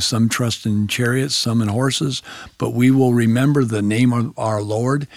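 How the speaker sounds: plain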